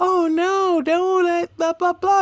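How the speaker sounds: very high, slow, put-on old-woman voice. Saying grandmas are enablers, mimicking what they always say: put-on granny voice. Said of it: "I don't know why that's my granny voice".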